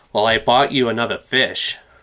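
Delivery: put-on American accent, casual delivery. Asked to let the others hear his american accent, the speaker tries a line in an american accent. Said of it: "Let's hear your American accent".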